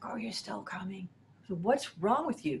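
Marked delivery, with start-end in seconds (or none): 0.0-1.1 hoarse, raspy, gravelly voice. Imitating a colleague on the phone with a sore throat: hoarse, gravelly voice. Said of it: "her throat was all hoarse. It was like".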